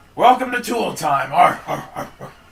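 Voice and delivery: very loud, high, scratchy, grunting put-on dwarf voice. Showing how to voice a bearded dwarf guard: put-on dwarf voice. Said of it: "that's not a dwarf".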